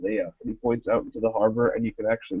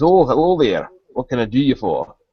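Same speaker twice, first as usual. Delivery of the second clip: put-on very loud, gummy, toothless old sailor voice; 2 semitones higher, 8 dB louder than usual. Voicing an old dock worker greeting a visitor: old toothless sailor voice.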